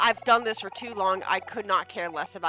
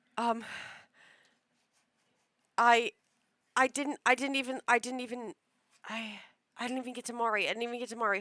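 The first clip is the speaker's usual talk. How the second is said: nervous stammering, higher and slower; 4 semitones higher than usual. Not ready to begin and admitting to nerves, nervous, stammering. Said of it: "I have the nervous peas".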